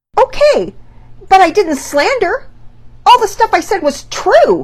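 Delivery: very high, loud, defensive blurted protest. Penelope answers Mama Peters' criticism, blurted out defensively. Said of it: "Penelope blurted out, still clinging to her defenses".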